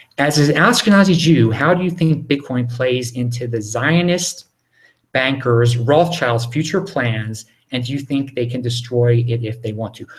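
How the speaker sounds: plain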